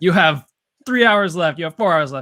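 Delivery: booming, very loud, high shout. Recalling filming the show, quoting Grady's time calls: imitating Grady's booming shout. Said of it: "shouting in his like booming voice".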